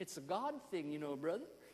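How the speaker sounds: imitated American accent. Recalling what a man said after a meeting: American accent. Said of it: "in an American accent".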